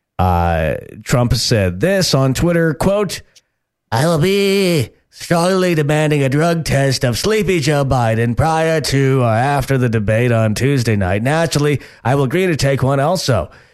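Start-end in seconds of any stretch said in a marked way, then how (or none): 3.9-13.5 lazy put-on politician voice, higher. Reading a quoted post aloud: lazy Donald Trump voice. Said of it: "your Trump voice is just not on par".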